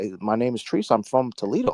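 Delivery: timid, polite, nervous voice. Retelling a caller who sounded like he owed money: imitating a nervous polite caller. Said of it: "he sounded like he was calling the bill collector".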